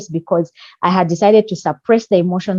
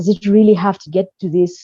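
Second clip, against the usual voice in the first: plain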